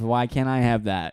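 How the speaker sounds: normal talking voice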